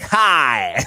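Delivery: bad put-on American accent, mocking. Show host mocking a guy's accent attempt, mocking bad American accent. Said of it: "That was the worst American".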